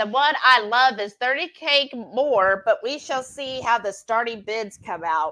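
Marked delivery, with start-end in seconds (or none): none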